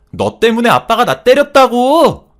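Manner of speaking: high, very loud, slow shriek, screaming. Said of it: "하면서 악을 쓰는데".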